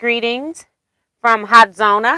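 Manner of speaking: usual speaking voice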